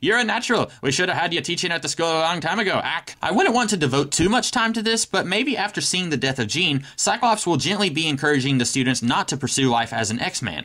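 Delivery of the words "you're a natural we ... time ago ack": put-on Irish brogue. Pitching a scene where Banshee talks with Scott; Banshee's Irish accent. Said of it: "Do you guys like my Irish accent?".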